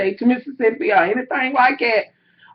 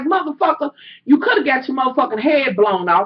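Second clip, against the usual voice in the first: mock furious, heated, angry outburst. Retelling what they said to a man in the room, retelling angry outburst. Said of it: "I'm getting pissed off".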